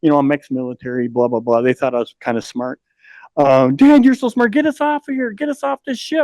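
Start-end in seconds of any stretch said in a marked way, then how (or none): 3.7-6.2 mock kids screaming, very high-pitched, pleading. Retelling how the kids in the chamber kept calling out: imitating kids screaming. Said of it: "they were just screaming at me all the time".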